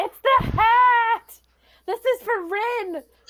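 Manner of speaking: very high, drawn-out screamed battle cry. A player charging at Ray with a short sword, screaming battle cry. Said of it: "I'm gonna scream".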